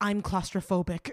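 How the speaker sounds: calm, even delivery. Retelling making direct eye contact with an attendant, retelling saying it calmly. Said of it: "I just calmly say".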